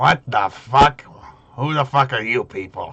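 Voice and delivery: little goblin character voice. Narrator voices the little goblin sitting in front of the players, goblin voice. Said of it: "is a little goblin".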